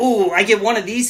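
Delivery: mock kid-like giddy delight, excited "ooh". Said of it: "he's getting all excited".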